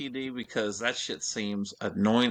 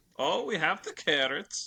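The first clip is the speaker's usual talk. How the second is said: put-on higher Norwegian accent; 7 semitones higher than usual. Joking about what a Norwegian cruise will sound like: Oaken from Frozen impression. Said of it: "sound like Homeboy in um in Frozen".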